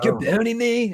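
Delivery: high California surfer-dude voice. Retelling what a man said to them, in a california surfer voice. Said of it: "he totally had that like California surfer voice".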